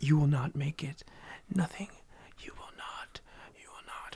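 jumble of overlapping, cacophonous hushed whispers. Game master voicing whispers the player's character keeps hearing, cacophonous whispers. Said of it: "cacophonous whispers".

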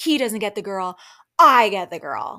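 mock menacing, jealous, angry, creepy, very loud outburst. Recapping a confessional, quoting what a jealous man said, mock-angry and creepy. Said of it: "the way he says it and how he looks was so angry and creepy".

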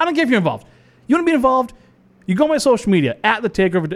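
pretend angry tone. Telling listeners to join on social media, pretending to get mad. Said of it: "Now I'm getting mad".

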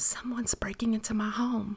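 hushed, low whisper under the breath. Reading a story, the narrator phones 911 during a break-in: whispered. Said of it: "I whispered".

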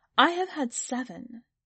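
proud, lifted, openly proud delivery. Anne answers a woman asking about her children, proud. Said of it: "Anne said proudly".

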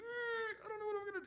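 high, soft, anxious whimper. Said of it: "and you're like".

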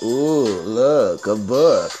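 put-on heavy, excited stress on book. Imitating how she tricked me with a book: mock excited emphasis on book. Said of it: "she was really putting emphasis on the books".

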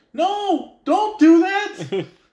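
put-on yelling. Retelling watching a movie and yelling at the screen: imitating yelling at the screen. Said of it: "I'm already yelling at the screen".

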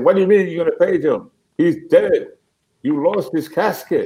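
play-acted, high, screaming voice. Retelling a woman who screamed at the speaker over paging her husband: imitating a woman screaming. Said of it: "she screamed at me and said".

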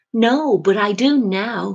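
cheerful, happy, very slow and drawn out. Jay answers the narrator's question about whether he knows Terence, happily. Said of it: "he said happily".

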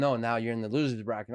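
usual speaking voice

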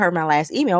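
usual speaking voice

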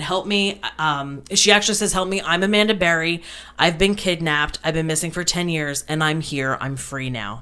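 ordinary talk

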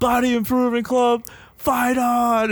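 high, loud, yelled cry.

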